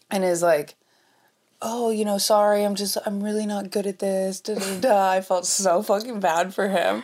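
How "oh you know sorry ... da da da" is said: play-acted sheepish, meek, timid, self-deprecating tone. Retelling a game night, imitating an uncle who is very meek. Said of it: "very meek".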